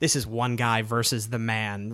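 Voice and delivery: ordinary talk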